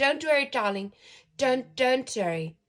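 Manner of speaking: very loud, high-pitched South African accent. Half South African speaker tries the line again, in a South African accent. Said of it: "that was a South African accent".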